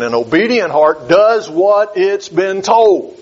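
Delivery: slow, emphatic, deliberate. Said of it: "Let me emphasize that again".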